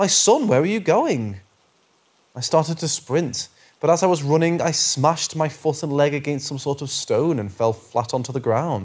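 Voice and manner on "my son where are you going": calling out after someone. Reading a creepy story, voicing the voice calling after the narrator: yelling. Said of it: "I heard the voice now yelling".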